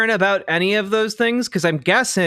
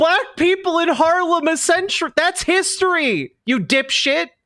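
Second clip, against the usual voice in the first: high, heated, mad, fed-up angry rant; 10 semitones higher than usual. Reacting to a claim that history lessons were replaced: mad. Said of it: "I'm so mad right now!".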